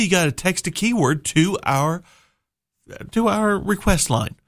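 losing the voice mid-sentence. Telling listeners how to text a keyword to the request line, voice giving out. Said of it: "I was losing my voice there".

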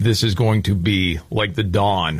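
ordinary talk, nothing marked

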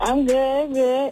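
flat, unhappy, unenthusiastic tone. A caller to a radio station answers the host's greeting, not sounding happy. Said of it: "you don't sound too happy for me".

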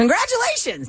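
excited, high, bursting, enthusiastic delivery.

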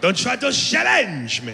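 word "challenge" mangled with swooping pitch. Quoting a movie villain before a fight: Jean-Claude Van Damme impression. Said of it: "trying to say challenge".

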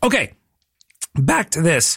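voice breaking and cracking on the words. Host returning to a giveaway announcement after a promo: voice cracking. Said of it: "my voice cracked".

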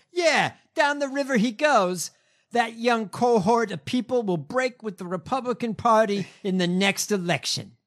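New York accent impression. Reading out a lawyer's quote to a magazine: put-on New York accent. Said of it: "I'm gonna give him a New York accent".

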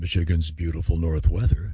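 mellifluous, smooth, serious FM radio announcer voice. Recalling recording radio station breaks, using the mellifluous, serious FM voice. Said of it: "use your mellifluous, serious".

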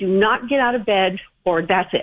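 plain

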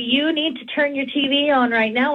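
ordinary delivery

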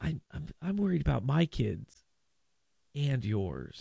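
soft, overly sing-song, creaky, swooping lilt. Imitating Katie Britt's way of talking: sing-songy Katie Britt voice. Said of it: "she gets a little too sing-songy".

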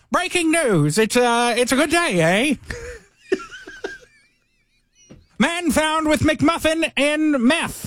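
vintage newsreader, Australian accent. Asked to give it a go, speaker does an old-timey newsman in an Australian accent. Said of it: "old-timey newsman in Australian accent".

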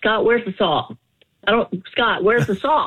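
flustered, frantic, emotional, worked-up calling out. Acting out searching the kitchen for the salt: acting all worked up. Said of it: "But you're so emotional".

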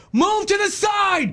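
put-on very high, slow, drawn-out distant yell. Recounting launching a boat, speaker quotes a man on shore: retelling a yell from shore. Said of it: "He's yelling from shore at me".

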